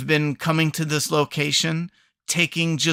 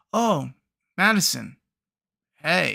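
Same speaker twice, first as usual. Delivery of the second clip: underwhelmed, half-hearted, sing-song tone. Mocking how characters greet each other at reunions: imitating an unexcited greeting. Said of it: "it's not even that excited".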